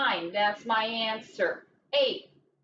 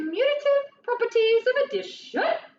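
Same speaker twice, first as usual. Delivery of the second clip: loud, very high, posh, fancy put-on voice; 13 semitones higher, 5 dB louder than usual. Naming a fancy math term they learned, put-on fancy voice. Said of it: "we say it like that because they're fancy words. They need a fancy voice".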